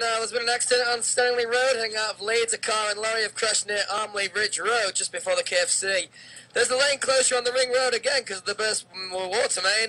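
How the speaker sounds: radio travel-news traffic bulletin announcer voice. Doing a mock Leeds radio travel bulletin, in a radio travel-news voice. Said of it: "With my best travel voice".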